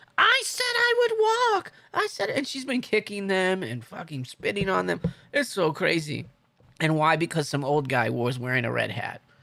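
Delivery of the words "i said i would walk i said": mock very high, shrill yelling. Retelling a woman yelling as police carry her through the park, retelling a yell. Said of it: "she's yelling".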